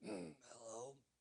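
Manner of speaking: soft, gravelly, sleepy just-woken voice. Describing late-night phone calls, imitating someone answering in a gravelly voice. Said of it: "their voice would be all gravelly".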